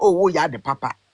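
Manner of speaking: usual speaking voice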